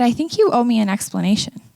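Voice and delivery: ordinary talk, nothing marked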